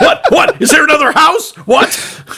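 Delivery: high, loud, frantic, panicked witch voice. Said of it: "Lar's looking around going".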